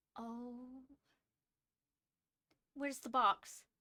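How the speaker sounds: jittery, worried, anxious and nervous voice. A woman sits waiting when a visitor arrives; anxious. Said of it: "She is just anxious".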